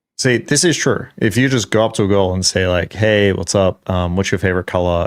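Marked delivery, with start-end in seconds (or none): 3.0-5.1 boring, dull, flat monotone, lower. Acting out a bland way of approaching a girl, in a boring monotone. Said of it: "in this very boring, monotone way".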